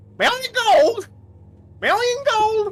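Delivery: shrill, very high, loud squawking parrot voice. Retelling a moment, imitating the parrot heard in the background. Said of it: "you hear the fucking parrot in the background go".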